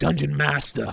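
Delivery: put-on New York accent. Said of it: "with his New York accent".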